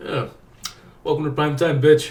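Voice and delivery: taunting voice like a film tough guy. Imagining a famous actor delivering the horror villain's line: Robert De Niro impression. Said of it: "Robert De Niro is like".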